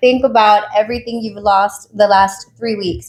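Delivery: ordinary talk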